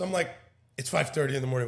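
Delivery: ordinary delivery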